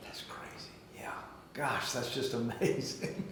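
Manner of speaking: hushed, barely voiced whisper. An interviewer reacts to a guest's story, whispering.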